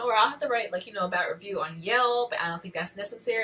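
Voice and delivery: ordinary talk, nothing marked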